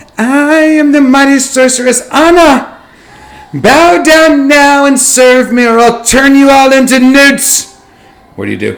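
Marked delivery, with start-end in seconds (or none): 0.2-7.8 put-on very high, shrill, loud, childish little girl voice. Game master voicing Anna to the players, in a high-pitched seven-year-old voice. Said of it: "says in a high pitched seven year old voice".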